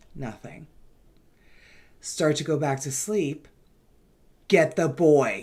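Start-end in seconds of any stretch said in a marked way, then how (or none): 4.5-5.4 much louder, slower, raspy voice. Retelling a voice heard from downstairs, now a much louder raspy voice. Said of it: "in a much louder voice this time".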